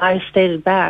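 usual speaking voice

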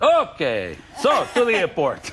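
put-on mixed French and Italian accent. Retelling a conversation about a diet, act out the other person in a put-on French-Italian Riviera accent. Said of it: "don't I do a great French-Italian Riviera accent".

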